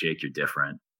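normal talking voice

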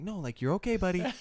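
gentle, high preschool teacher tone. Recalling comforting someone, the speaker uses a soft preschool teacher voice. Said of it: "I got my preschool teacher voice".

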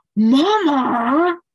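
loud, high-pitched calling out. Imitating a husband who sees a snack grabbed: imitating husband calling out. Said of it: "I'm gonna imitate my husband for a second".

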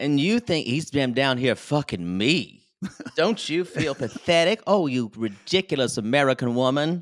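put-on, theatrical, over-the-top Southern accent. Quoting a woman's recorded message to an American woman, dramatic Southern accent. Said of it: "she channeled fucking dramatic Southern".

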